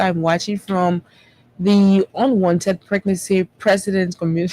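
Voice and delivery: plain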